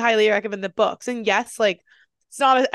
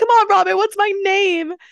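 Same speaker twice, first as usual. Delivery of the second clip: very high, bright, put-on British accent; 11 semitones higher, 6 dB louder than usual. Retelling a moment between Emma Watson and Robert Pattinson, doing Emma Watson's British accent. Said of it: "like in her British accent".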